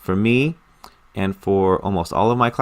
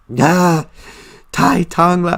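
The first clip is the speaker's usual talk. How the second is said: put-on high, loud, hurt, childlike pained complaining voice; 9 semitones higher, 6 dB louder than usual. Child in a Chinese-lesson dialogue complains to her mom, pained complaining. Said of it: "the pain in the child's voice".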